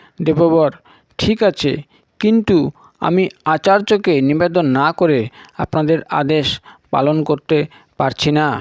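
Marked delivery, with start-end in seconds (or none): none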